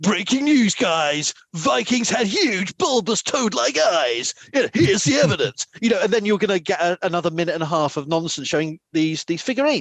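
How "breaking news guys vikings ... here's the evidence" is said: self-assured, confident, slow American Hollywood drawl. Imagining a confident TikTok presenter's video: confident American Hollywood accent. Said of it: "let me do my confident American Hollywood accent".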